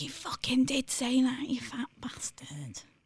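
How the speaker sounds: acted furious outburst. Retelling how mum answered a teacher's denial: imitating a fuming mum. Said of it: "my mum was fuming".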